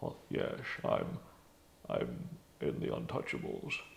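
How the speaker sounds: low, whispery put-on voice. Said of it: "it's like".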